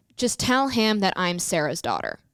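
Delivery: ordinary talk, nothing marked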